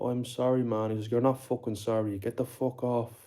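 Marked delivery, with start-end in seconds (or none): 1.1-3.1 furious, swearing outburst. Recounting what a friend said to someone smoking crack, retelling mate's angry outburst. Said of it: "My mate went mad".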